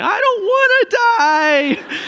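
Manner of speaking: put-on crying. Retelling how a boy at dinner in a restaurant started crying, imitating him bawling. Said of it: "just starts bawling, crying".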